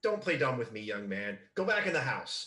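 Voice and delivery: furious, hissed, angry voice. Voicing an angry mother scolding her son: angry mother. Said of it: "the angriest snake hiss".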